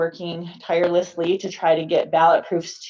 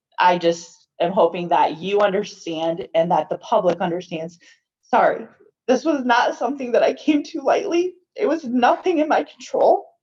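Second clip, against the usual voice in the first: openly emotional, apologetic voice; 3 semitones higher than usual. Apologizing to the public for changes in how her office works, emotional voice. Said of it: "I'm sorry I'm emotional".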